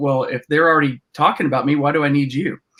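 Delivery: ordinary talk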